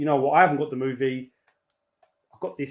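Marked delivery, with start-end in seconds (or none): none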